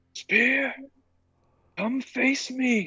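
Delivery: booming loud yell, very high, very slow, drawn-out. Calling out a challenge in character: yelling really loud. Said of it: "I'm gonna yell".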